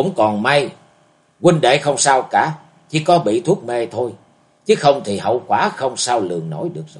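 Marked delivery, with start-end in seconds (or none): none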